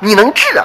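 man's mocking shout, high and loud.

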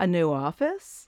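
gentle, rising questioning lilt. Demonstrating a minimal encourager by echoing the customer's statement, questioning rising intonation. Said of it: "say it with a little question mark in your voice".

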